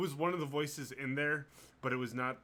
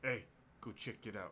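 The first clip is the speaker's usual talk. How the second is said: gruff, rough, hushed whisper; 3 semitones lower, 8 dB quieter than usual. Narrating for a player waiting at a corner, voice someone nearby in a gruff whisper. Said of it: "you hear gruff voice whispers like".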